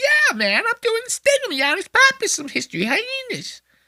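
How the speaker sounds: very high, pushed-up, cutesy joking voice. Imitating Giannis making a joke on History Hyenas: high-pitched Giannis Pappas voice. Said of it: "he'll go real high with it like this".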